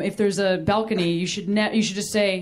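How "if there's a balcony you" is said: plain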